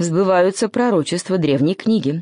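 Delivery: plain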